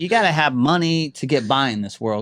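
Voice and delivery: ordinary talk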